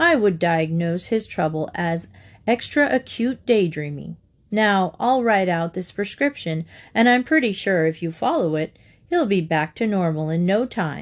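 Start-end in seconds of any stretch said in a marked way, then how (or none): none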